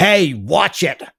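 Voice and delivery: put-on harsh, grating New Jersey accent. Retelling a man's snappy retort, in his accent: grating New Jersey-ish accent. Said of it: "he has this this grating accent".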